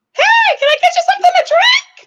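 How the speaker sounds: very high-pitched, loud voice. Retelling what a man said at a party: imitating Big Bird voice. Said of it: "But that voice".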